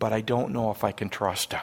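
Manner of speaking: mock under-breath muttering. Acting out a young friend's added remark about a man, imitating someone under her breath. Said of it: "she adds kind of under her breath".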